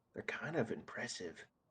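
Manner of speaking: quiet, hushed whispered voice. Voicing a character speaking to another about three magic users: whispering. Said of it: "he whispers to you".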